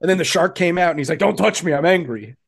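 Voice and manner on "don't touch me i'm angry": put-on angry commentator voice. Retelling how Tony Schiavone reacted after the match: imitating an angry Tony Schiavone. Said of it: "He was so mad".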